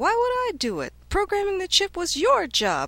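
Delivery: very high, shrill, loud yell with big pitch swings. [name] answers Chu, who blamed him for the programming, yelling. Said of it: "[name] yelled".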